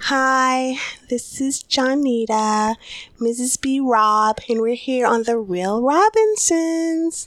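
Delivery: most proper, formal interviewer voice. Asked for their most proper, interviewish voice, introducing the show in a proper interview voice. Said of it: "me your most proper, your most interviewish voice".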